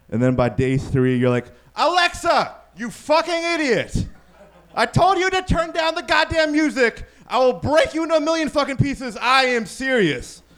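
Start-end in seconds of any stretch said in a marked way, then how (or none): 1.7-10.4 put-on, very high-pitched, shrill, furious angry yelling. Acting out a user losing patience with Alexa by day three, mock-yelling at Alexa. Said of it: "teaching me to yell at them".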